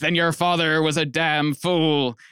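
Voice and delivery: put-on grizzled, worn-out, world-weary old man voice. Telling a scene, the speaker voices a blacksmith answering young Sauron, grizzled old world-weary blacksmith. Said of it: "this is a grizzled old world-weary blacksmith".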